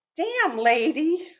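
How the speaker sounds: slow, high-pitched startled man voice. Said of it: "He goes".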